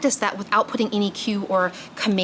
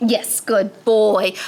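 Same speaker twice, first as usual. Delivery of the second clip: raised, sincere, meaningful tone, meant to be believed; 5 dB louder than usual. Showing how to give dogs the yes command, said with intention. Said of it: "I'm saying it with intention so that they believe it".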